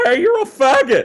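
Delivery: put-on very high, squeaky child's voice. Retelling prank calls on the CB radio as a ten-year-old: imitating a high-pitched squeaky kid voice. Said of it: "So we have these high-pitched, squeaky kind of voices".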